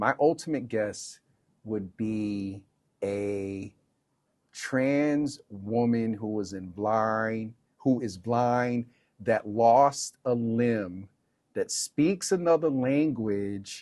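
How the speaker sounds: slow, measured, deliberate, word-by-word pacing. Describing their ultimate guest, announcing it will be said slow: saying it slow. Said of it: "I'm going to say it slow".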